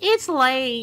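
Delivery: put-on super sweet girl voice. Reading a game line aloud, trying Daji's super sweet voice. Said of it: "my impression of Daji's super sweet voice".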